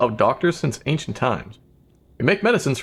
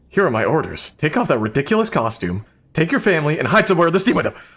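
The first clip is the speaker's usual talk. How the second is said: fast, aggressive, commanding delivery. Giving orders to a listener, aggressive orders. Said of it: "I get a little aggressive sometimes".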